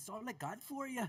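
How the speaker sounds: put-on Irish accent, very high pitched. Teasing another speaker by repeating his line: imitating Craig's Irish-sounding line. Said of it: "why did Craig sound Irish right then".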